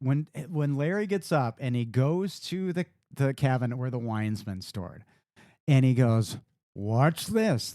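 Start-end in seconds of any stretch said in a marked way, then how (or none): 6.8-7.7 mock-judgy, imitated judgmental tone. Retelling a movie scene where Larry says a line: imitating a judgy tone. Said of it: "like, all judgy".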